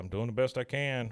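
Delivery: ordinary delivery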